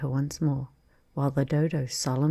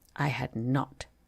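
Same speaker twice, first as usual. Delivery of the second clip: sharp, very angry cry, cut short; 2 semitones lower, 4 dB quieter than usual. Narrating the Mouse answering Alice: a sharp, very angry cry. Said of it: "cried the Mouse, sharply and very angrily".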